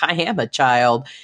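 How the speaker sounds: usual speaking voice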